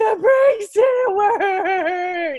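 put-on bawling. Speaker retells crashing a car into the garage door, imitating bawling. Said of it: "and I'm like bawling".

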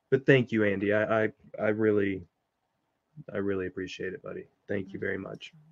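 grateful, near tears. Podcast host thanking a buddy for his help; teary gratitude. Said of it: "I'm gonna sit over here and cry now".

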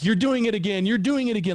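mock high, accusing yelling. Retelling a companion yelling at the speaker in the night; imitating someone yelling. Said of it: "he's yelling at me".

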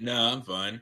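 croaky, worn-out, hoarse, fried voice. Speaker who woke up with a sore throat insists they're fine, fried voice. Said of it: "my voice sounds a little bit more fried than normal".

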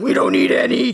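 loud, rough, creaky voice. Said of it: "the loud, deep voice said".

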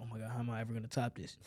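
fearful, anxious tone. Showing the wrong way to ask yourself a question about your work: scared tone. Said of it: "don't ask that question in a scared tone".

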